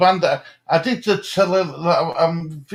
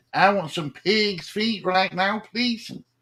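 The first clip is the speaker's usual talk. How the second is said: put-on American accent; 3 semitones higher, 4 dB quieter than usual. Echoing the other speaker's words in a put-on american accent. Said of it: "Oh, an American accent".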